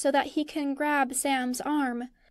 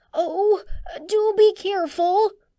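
breathless gasp, higher and louder; 6 semitones higher, 6 dB louder than usual. Bilbo warns as a creature writhes in his and Frodo's hold, gasping and breathless. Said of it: "Bilbo manages to gasp".

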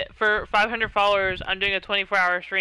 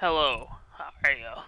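low, deep-voiced delivery. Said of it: "he got this, like, deep voice".

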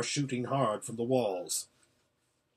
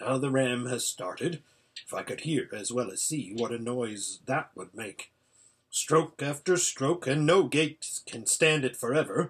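ordinary delivery

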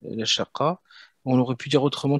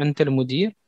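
questioning rising tune on Anta al-Mudir. Wondering whether the person facing you is the one: questioning intonation. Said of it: "On peut dire aussi tout simplement Anta avec l'intonation".

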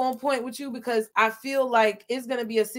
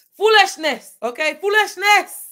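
put-on Nigerian accent, loud and high; 8 semitones higher, 8 dB louder than usual. Talking to viewers about unpredictable events, speaker uses a best nigerian accent. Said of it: "In my best Nigerian accent".

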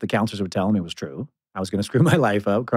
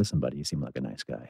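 low, lowered, menacing voice; 8 semitones lower, 9 dB quieter than usual. Retelling what he says when leaning in to a very drunk guy, lowered voice. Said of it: "lower my voice and lean in".

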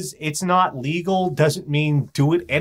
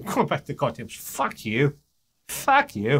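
poorly faked Scottish or Cockney accent; 4 dB quieter than usual. Imagining what the gecko would say, bad Scottish or Cockney accent. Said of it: "I don't think he's Scottish or Cockney".

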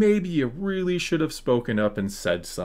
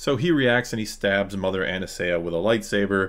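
usual speaking voice

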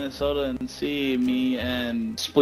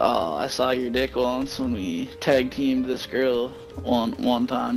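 usual speaking voice

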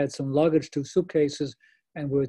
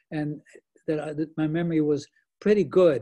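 usual speaking voice

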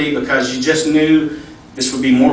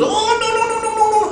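put-on Ethiopian accent pitched very high. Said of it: "is it not exactly how he talks".

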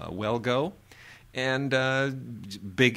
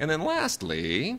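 voice breaking mid-phrase, cracking and jumping high; 6 semitones higher than usual. Moving to the last film on a list, voice cracking. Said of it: "my voice cracked there".

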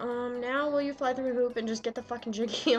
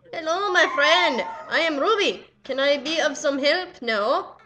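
clumsy, bad put-on Indian accent; 4 semitones higher, 7 dB louder than usual. Speaker greets someone who starts talking to them: bad indian accent. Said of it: "That's the worst Indian accent I've ever done".

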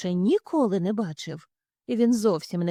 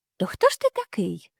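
warm, friendly, amiable tone. Narrator reads the alley cat questioning the newcomer, in a friendly voice. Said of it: "запитав він приязним голосом".

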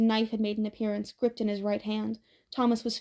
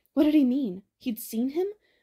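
plain reading voice

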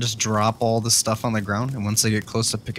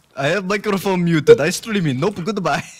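snide, high, taunting, mocking echo; 7 semitones higher, 4 dB louder than usual. Repeating the taunting player's words after being asked what he said: imitating the taunting player. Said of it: "What did he say?".

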